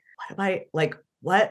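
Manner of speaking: whispered voice. Retelling how a man broke off mid-sentence to ask for help, imitating someone whispering. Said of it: "broke off in the middle of a sentence and whispered to me".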